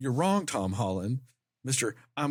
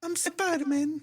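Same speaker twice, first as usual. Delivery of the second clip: mock little British orphan voice, higher pitch. Mocking how the actor sounds in everything: imitating Tom Holland as a British orphan. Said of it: "he sounds like a little British orphan".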